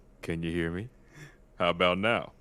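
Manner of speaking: hushed, quiet half-whisper. Testing whether others hear through the vents: half-whispering. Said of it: "I'll whisper".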